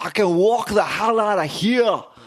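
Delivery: yelling in a terrible put-on Scottish accent. Speaker retells a movie line; Christopher Lambert yelling, bad Scottish accent. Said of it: "He just yells".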